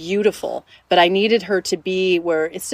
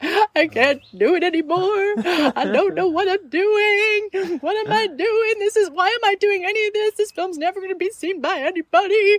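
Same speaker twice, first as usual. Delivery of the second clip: put-on tearful, pleading crying, higher pitch; 12 semitones higher than usual. Retelling a tearful phone call while editing a film: imitating her own crying. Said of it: "I just started crying. I'm like".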